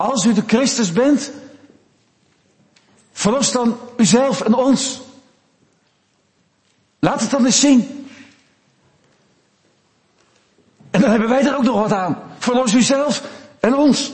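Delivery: high, sneering, scornful, mocking jeer. A preacher acts out what those beside Jesus said, quoting a mocking taunt.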